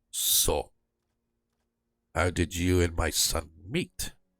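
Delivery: restrained, careful, very quiet and slow. A game master voicing a character's father, holding back his anger: very quiet. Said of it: "he's very quietly says to Nilo".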